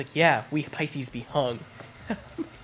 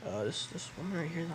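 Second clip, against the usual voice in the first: whisper, quieter; 3 semitones higher, 8 dB quieter than usual. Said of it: "whispering really under us".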